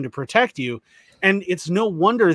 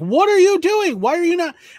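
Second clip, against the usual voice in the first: very high, shrill screaming voice; 13 semitones higher than usual. Retelling how a bystander confronted an officer: imitating someone screaming. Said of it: "screaming at him".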